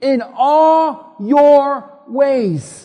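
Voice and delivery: very slow, loud, drawn-out delivery. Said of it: "Say that with me".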